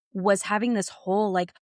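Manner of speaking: ordinary delivery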